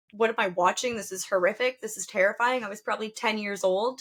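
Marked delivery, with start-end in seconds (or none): none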